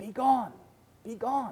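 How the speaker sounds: high, hushed stage half-whisper. Retelling how the prompter fed a forgotten line: imitating a half-whisper. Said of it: "The prompter from the side whispered out".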